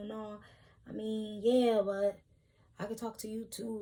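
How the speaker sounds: earnest, pleading, almost begging. Retelling how a man kept trying to talk to her: imitating someone pleading. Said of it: "pleading with me".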